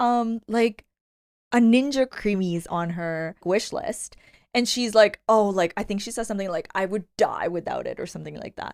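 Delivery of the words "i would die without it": over-the-top, exaggerated, sarcastic and joking dramatic tone. Retelling what a bride wrote about her wish list: imitating an exaggerated sarcastic tone. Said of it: "a sarcastic, like, you know, like, an exaggerated tone".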